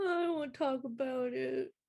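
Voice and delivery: acted, tearful crying voice. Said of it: "why are you crying?".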